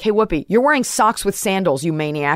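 ordinary talk

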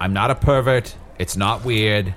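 ordinary talk

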